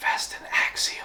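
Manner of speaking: hushed, breathy, secretive whisper. Speaker tells listeners to come closer, then whispering. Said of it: "I'm whispering".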